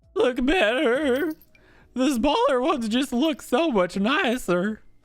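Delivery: voice breaking and cracking, very high pitch. Speaker judging which ones look better, voice cracking. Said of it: "My voice is cracking".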